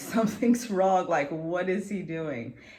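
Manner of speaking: frightened, alarmed, urgent yelling. Retelling the pain during an epidural, yelling that something's wrong: retelling own past yell.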